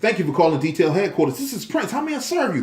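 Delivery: energetic, enthusiastic, excited delivery with swooping pitch. Business owner shows how to answer the phone professionally: excited. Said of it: "With excitement in my voice".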